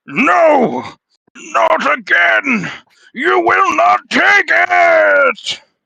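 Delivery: wet, ferocious, very high, very loud monster cry. Voicing the undead creature as it calls out: wet, ferocious voice. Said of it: "Wet, ferocious voice call out".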